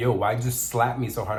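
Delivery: plain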